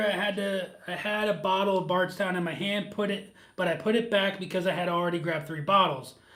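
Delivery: ordinary delivery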